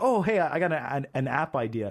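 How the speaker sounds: ordinary talk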